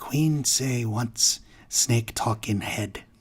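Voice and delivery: hushed half-whisper. Odgrok answers a player's question about the queen, half-whispering. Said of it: "Odgrok nods and he whispers".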